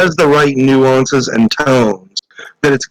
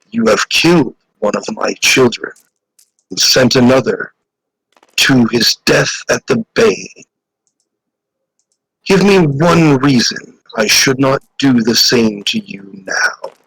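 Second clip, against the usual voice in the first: big, deep, low creature voice. Voicing a creature that speaks to the players after a successful roll: deep voice. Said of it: "the deep voice says".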